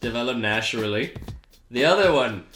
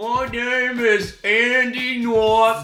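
put-on Maine drawl, very high pitched and very slow; 10 semitones higher than usual. Teasing the other speaker about a slip: put-on Maine accent. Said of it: "you sound like one of them".

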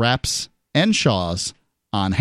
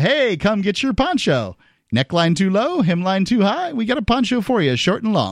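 smug, self-satisfied, mocking call-out, pitched up; 7 semitones higher than usual. Imitating the school handing out ponchos to students: imitating a smug tone. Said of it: "it sounded a little smug".

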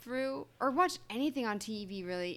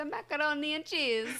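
clumsy, bad fake Italian accent, pitched up; 5 semitones higher than usual. Imitating the italian from a story to friends, in a bad italian accent. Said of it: "Your accent was even worse".

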